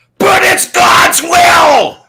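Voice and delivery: very loud, very high shrill scream, will drawn out. Retelling an argument, re-enacting how the other man screamed back. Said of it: "this guy literally screams".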